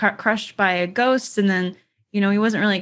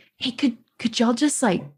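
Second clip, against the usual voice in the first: just a whisper, pleading tone; 3 semitones higher than usual. Retelling a story, acting out a woman's request to a group, imitating her whisper. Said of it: "she like whispers".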